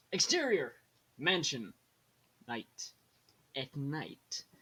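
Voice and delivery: kids' cartoon announcer-style narrator voice. Reading a screenplay aloud, speaking the scene heading in SpongeBob narrator voice. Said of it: "I'm doing the SpongeBob voices".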